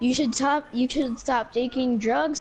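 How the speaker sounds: plain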